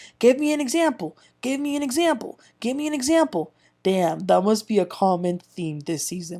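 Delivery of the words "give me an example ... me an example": mock, high, insistent, demanding, angry repeated shout. Recapping an argument from this season, retelling a cast member shouting demands. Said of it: "Crystal kept shouting".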